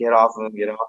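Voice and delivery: acted-out mild yell like toned-down crowd screaming. Retelling how a wrestler's family reacted at ringside: imitating family screaming. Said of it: "screaming and yelling".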